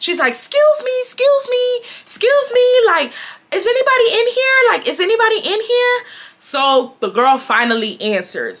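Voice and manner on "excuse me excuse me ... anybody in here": acted, shrill, insistent, very high, repeated yelling. Retelling waiting at a dressing room door: imitating Chelsea yelling. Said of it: "Chelsea's just yelling it at this point".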